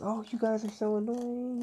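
play-acted high-pitched, angry yelling rant. Retelling how a neighbor yelled at the friends from her balcony: imitating a neighbor yelling. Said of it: "yelling at us".

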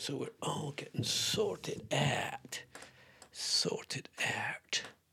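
whispering. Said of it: "I don't know why I'm whispering like this".

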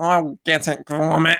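very slow, drawn-out, shaky, bad fake British accent. Retelling the scene where Wallace gets out of the van, bad Wallace impression. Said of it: "It sounded like you At were an American doing a fake British will".

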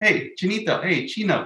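slow, high, menacing, mocking, intimidating taunting. Retelling the deli counter guy calling out to him, imitating an intimidating taunt. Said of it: "they try to say it in a way to intimidate you".

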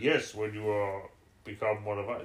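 slow, machine-like robotic voice. Speaker retells the Cybermen's reply to someone offering to help, in Cyberman voice. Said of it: "he said that in the Cyberman voice".

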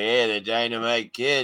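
every word dragged out very slowly. Retelling a shoot interview, imitating a brother who talks like Stu. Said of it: "he talks like Stu".

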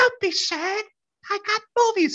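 put-on very high, slow, dragging older lady voice. Retelling how an older lady selling DVDs talked: imitating her voice. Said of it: "And that's how she sounded".

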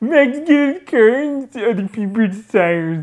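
put-on little nerd voice, high and loud. Glasses on, repeating the line to a friend in a nerdy voice. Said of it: "You sound like such a little nerd".

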